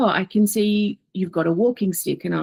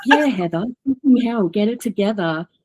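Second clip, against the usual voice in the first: playful, mocking, teasing tone; 7 semitones higher than usual. Retelling how someone teased her by repeating her own words back to her. Mocking, teasing. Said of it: "under my breath".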